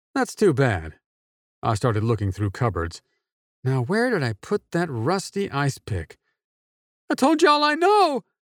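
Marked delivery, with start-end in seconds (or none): 7.0-8.2 very high, squealed. Narrator reading Bob answering the narrator who holds him, squealing. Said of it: "Bob squealed".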